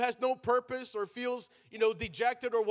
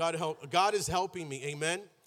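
ordinary delivery

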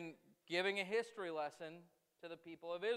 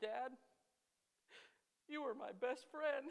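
put-on tearful crying child voice, higher pitch; 7 semitones higher than usual. Retelling a disciplined son's words to his dad, imitating a crying child. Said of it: "And he's crying".

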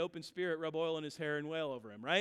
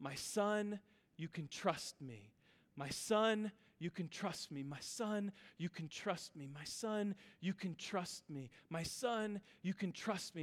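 put-on woman's cry, quieter; 5 dB quieter than usual. Retelling a woman heard praying in perfect English: imitating a woman crying out. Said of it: "she was crying out over and over".

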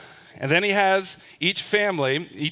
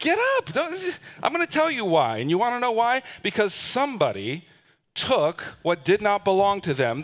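put-on sassy tone, full of attitude, swooping sing-song; 6 semitones higher than usual. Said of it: "it gets sassy".

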